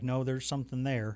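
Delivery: ordinary delivery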